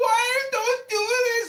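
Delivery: put-on very high, stretched-out screaming. Retelling a couple walking past the house, imitating the woman screaming. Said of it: "and she was screaming".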